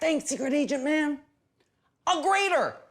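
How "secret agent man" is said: whispered, higher-pitched. Thanking a secret agent character for a kitchen utensil, whispering.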